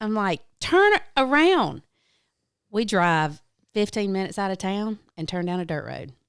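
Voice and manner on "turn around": very high, loud shrieking scream. Retelling telling a cab driver to go back to the airport: retelling screaming. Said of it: "I start screaming at him".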